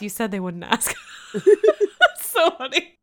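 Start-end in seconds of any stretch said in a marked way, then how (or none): 0.0-0.9 mock mutter under the breath. Retelling a group conversation, the speaker quotes a friend, mock muttering under breath. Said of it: "under his breath".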